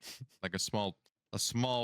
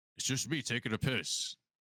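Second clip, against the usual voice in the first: put-on, disguised orc voice; 3 semitones higher than usual. In a tabletop game, a player hiding behind a tree answers a yelling orc: disguised different voice. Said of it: "like in a in a different voice".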